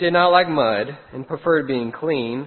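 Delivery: ordinary delivery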